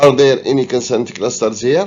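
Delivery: normal talking voice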